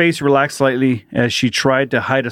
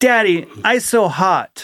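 put-on very slow, pitched-up two-year-old toddler voice; 6 semitones higher than usual. Retelling a son's complaint on a hot outing: imitating a little two-year-old voice. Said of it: "in his little two-year-old voice".

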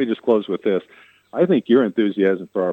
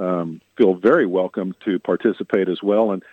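ordinary talk, nothing marked

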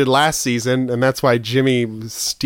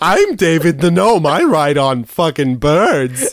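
pitched up, with a swinging lilt; 5 semitones higher, 4 dB louder than usual. The speaker does his favorite character voice for the other speaker; David the Gnome voice. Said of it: "I started talking like this".

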